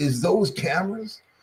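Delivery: high, female-sounding voice. Retelling a voice heard on camera footage while editing, imitating a female voice. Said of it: "like a female voice".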